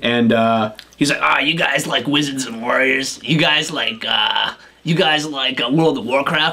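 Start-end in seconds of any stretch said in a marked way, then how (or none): 1.2-6.5 put-on tipsy, rambling drunk bro kid voice. Retelling what a drunk bro kid said at the store: imitating a drunk bro.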